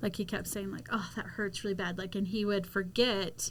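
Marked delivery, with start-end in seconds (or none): none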